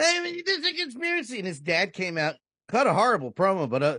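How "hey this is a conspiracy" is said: put-on whiny voice, pitched much higher. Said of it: "doing his whiny, crybaby kind of gimmick".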